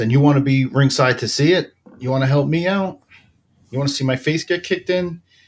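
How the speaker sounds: mock mild yell. Retelling a film scene where Rocky yells at Mickey: imitating Rocky yelling.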